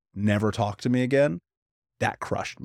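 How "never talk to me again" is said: ordinary talk, nothing marked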